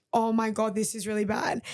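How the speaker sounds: ordinary delivery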